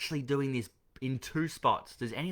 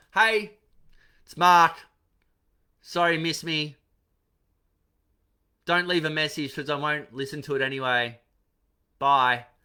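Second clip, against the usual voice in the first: very loud, sloppy, careless offhand delivery; 4 semitones higher, 9 dB louder than usual. Mocking an unprofessional voicemail greeting: imitating a careless, unprofessional voicemail greeting. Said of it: "Some messages are like that".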